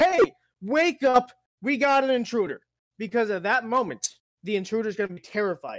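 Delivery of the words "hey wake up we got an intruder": high, drawn-out, play-acted top-of-the-lungs scream. Acting out waking the house about a break-in: acting out screaming loudly. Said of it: "screaming at the top of my lungs".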